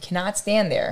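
ordinary delivery

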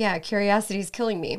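normal talking voice

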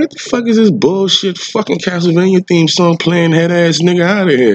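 very high-pitched, loud shout. Retelling what he said to another person over club music: retelling yelling across the club. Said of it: "I'm basically yelling halfway across the club".

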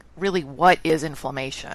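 ordinary talk

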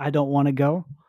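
plain

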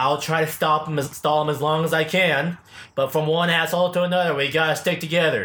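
ordinary talk

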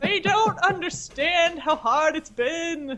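put-on slow old-man grumble. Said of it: "I suppose you could have said".

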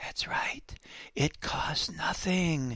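soft, hushed, murmured stage whisper. Retelling how the president spoke into the camera: imitating a whisper. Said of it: "in his best whispering voice".

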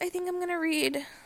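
voice breaking mid-phrase, cracking up high. Speaker tells listeners which book they plan to read next, voice cracking. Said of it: "My voice broke there".

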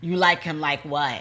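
normal talking voice

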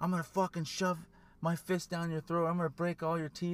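light, mild screaming, ranting tone. Retelling seeing a lady scream at a man, imitating a woman screaming. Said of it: "she's screaming at this dude".

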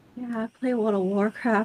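mock shamefaced, soft, sheepish, ashamed tone. Retelling how a man answered her casual question, imitating an ashamed tone. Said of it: "he said it in a sort of like a shame kind of way".

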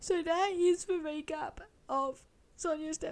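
bawling, tearful crying, voice breaking. Host wrapping up a recap of Sonia's death, crying. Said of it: "I knew I was going to bawl at some point".

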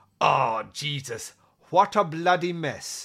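put-on English accent. Retelling a movie scene, quoting the actor's line: imitating Malcolm McDowell. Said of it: "Malcolm McDowell can pronounce and not an English accent".

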